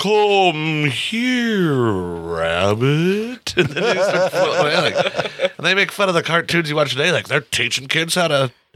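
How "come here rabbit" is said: woozy slow drawl, "rabbit" stretched out. Retelling a cartoon where characters float after an ether bottle leaks: talking slow. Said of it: "it starts talking slow".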